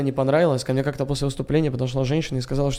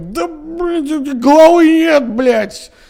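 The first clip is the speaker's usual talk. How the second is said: put-on very high, slow, drawn-out drunken yelling; 12 semitones higher, 8 dB louder than usual. Telling how a joke finished off a tense man, imitating his drunken yelling. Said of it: "чувак орал пьяный".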